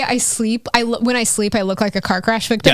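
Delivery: ordinary talk, nothing marked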